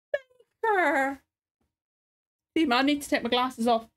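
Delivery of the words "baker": high-pitched, sobbing crying voice. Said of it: "'cause I'm crying".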